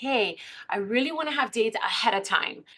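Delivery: ordinary delivery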